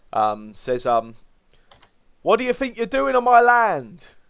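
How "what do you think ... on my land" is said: very high, raised, calling halfling voice. Voicing a halfling calling over to the party about his land: halfling voice calling over. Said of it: "you hear his voice sort of call over to you".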